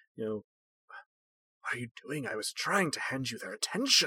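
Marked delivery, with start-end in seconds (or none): 1.6-4.1 curt, terse, posh undertone under the breath. The hermit rounds on two players as attention slides away: posh hermit's terse undertone. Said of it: "Character I described last time as a posh hermit, / Character I described last time as a posh hermit, so with it wearing a, you know, sort of loose-fitting, monocolored robe without really anything in".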